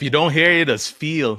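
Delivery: put-on high, slow Caribbean accent. Quoting a mom's saying about consequences: Caribbean accent. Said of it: "You gotta say it with some Caribbean accent".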